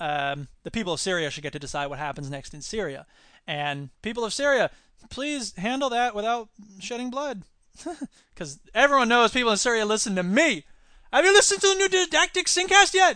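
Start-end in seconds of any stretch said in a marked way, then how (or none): 11.1-13.2 loud, high-pitched Indian accent. Speaker asks listeners about a new show, in an Indian accent. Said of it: "you sound Indian".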